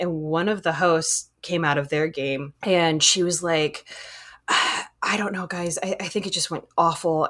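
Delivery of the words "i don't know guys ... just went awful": mock-embarrassed, dismayed voice. Retelling what a game host said coming out of her game, imitating her embarrassment. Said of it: "I'm so embarrassed right now".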